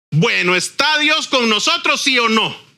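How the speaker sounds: acted defiant, provocative, challenging tone. Acting out the children of Israel tempting Jehová, mock-defiant, challenging tone. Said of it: "se lo voy a decir así como yo lo oigo que lo dijeron ... Así, con esa actitud, lo dijeron".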